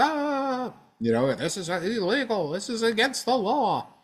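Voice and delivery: very high, slow, climbing scream, stretched "ah". Imagining Chuck Schumer running to the microphone: imitating Chuck Schumer screaming. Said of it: "start screaming".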